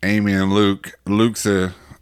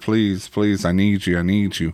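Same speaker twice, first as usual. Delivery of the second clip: put-on crying out. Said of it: "you're crying out, like".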